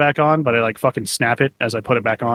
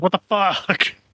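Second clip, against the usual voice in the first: mock-furious put-on anger, pitched higher; 8 semitones higher than usual. Recalling parents not being home for the birthday, retelling own angry outburst. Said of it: "That's why I was so fucking pissed".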